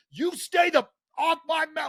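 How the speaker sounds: mock yelling, very high-pitched. Retelling a heated moment with an opposing player: imitating himself yelling. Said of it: "and I'm yelling".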